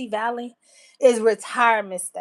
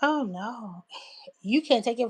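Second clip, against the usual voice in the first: put-on dead serious tone, quieter; 6 dB quieter than usual. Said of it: "he was so serious".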